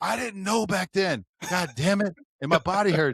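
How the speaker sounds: high, loud yelling. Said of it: "Like, I'm yelling".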